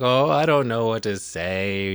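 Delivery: mock bashful young girl, unsure, slow, drawn out. Retelling a girl's words into a tape recorder: imitating a shy girl. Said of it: "acting all shy and stuff".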